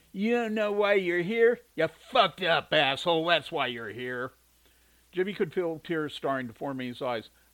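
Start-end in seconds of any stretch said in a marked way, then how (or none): 0.1-4.3 loud, high, jeering, abusive mocking taunting voice. Walking around the table to a confused person, mocking. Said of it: "Alex mocked him".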